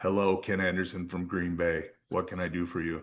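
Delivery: flat monotone voice.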